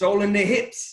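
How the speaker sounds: put-on high, loud, thick South African accent. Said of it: "in his thick South African accent".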